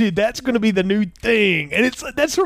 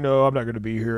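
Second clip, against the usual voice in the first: put-on calm deep voice, much lower; 10 semitones lower, 4 dB quieter than usual. A viewer recounts a film scene, imitating Hulk Hogan calm. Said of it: "and he's all calm".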